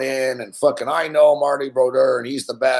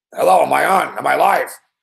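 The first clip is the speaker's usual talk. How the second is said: put-on voice of a very old man; 3 semitones higher than usual. Retelling a radio call from an elderly caller: imitating a very old man caller. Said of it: "Guy sounds like he's, like, a hundred years old".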